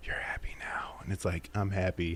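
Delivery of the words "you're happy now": very soft hushed whisper under the breath. Contrasting yelling through a megaphone with whispering; this line is whispered. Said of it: "Or whispering, like".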